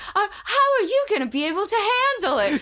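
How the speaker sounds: put-on very high, old-fashioned newsboy patter. Retelling a character's line to a heroine, in an old-timey newsboy voice. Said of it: "You make him sound like an old timey newsboy".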